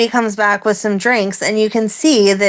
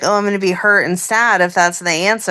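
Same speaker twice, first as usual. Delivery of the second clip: ordinary talk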